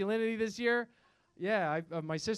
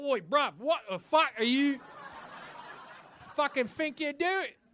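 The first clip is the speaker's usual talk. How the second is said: sudden put-on Australian accent, pitched up; 5 semitones higher than usual. Retelling a kid in a bus queue, in a put-on Australian accent. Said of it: "Just to immediately turn Australian".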